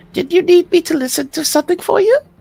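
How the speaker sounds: tiny, very high, itty-bitty little voice. A tiny voice calls out to the player heading for the door; tiny voice. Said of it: "you hear a tiny voice going".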